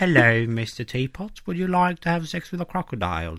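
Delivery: put-on sophisticated London English. Showing an accent no real Englishman speaks, in sophisticated London English accent. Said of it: "pratade Sofistikerad London engelska".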